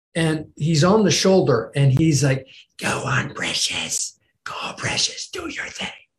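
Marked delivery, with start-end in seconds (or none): 2.7-5.8 hissy, wicked, evil creature whisper. Describing the ego as Gollum on the shoulder, the speaker voices it: hissy, evil Gollum voice. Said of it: "that hissy, evil voice".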